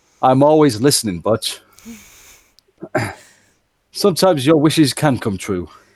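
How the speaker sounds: put-on cheery, twinkly, jolly old man voice. Voicing Santa, who winks at a player character: Santa voice. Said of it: "looks at Butch and winks and says".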